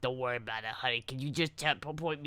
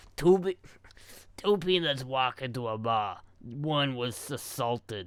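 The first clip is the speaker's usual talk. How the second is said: put-on New York accent, chain-smoker voice; 4 dB louder than usual. Taking a viewer request to tell a joke, new york smoker voice. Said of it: "Do the New York smoker voice".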